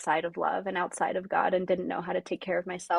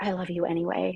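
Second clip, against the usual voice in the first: imitated tender, kind, loving, gentle voice. Retelling a loving inner voice heard during a ceremony: imitating a tender, kind voice. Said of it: "tender, kind voice and energy".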